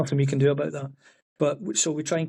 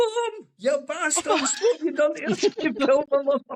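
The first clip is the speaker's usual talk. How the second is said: put-on shouting, pitched higher; 13 semitones higher than usual. Retelling a friend in a costume at a hog roast: imitating someone shouting. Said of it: "he shouts".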